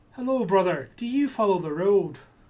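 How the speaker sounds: put-on young voice, loud and friendly. Game master voices a young tiefling stepping in front of the procession to greet Warden. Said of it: "a young tiefling sort of steps in front".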